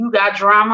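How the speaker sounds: normal talking voice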